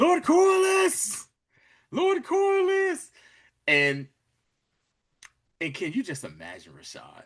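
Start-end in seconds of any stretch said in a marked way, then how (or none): 0.0-3.1 mock character voice yelling, higher and louder. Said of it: "just yelling".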